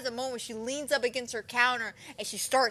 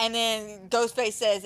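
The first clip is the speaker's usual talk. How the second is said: usual speaking voice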